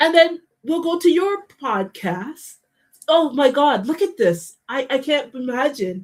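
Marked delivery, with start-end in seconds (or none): 3.1-6.0 sarcastic, fake astonished tone. Talking about people liking each other's videos: sarcastic mock amazement. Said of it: "I'm being absolutely sarcastic".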